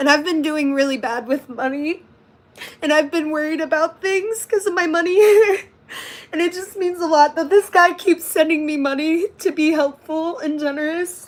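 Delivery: tearful words spoken while crying. Talking about a guy who keeps sending money, crying while talking. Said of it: "I'm sorry for crying".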